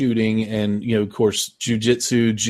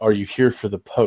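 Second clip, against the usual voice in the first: mock whisper, acted out. Recounting a scene where one man leans in to another, retelling a whispered question. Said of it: "he leans into him and he whispers".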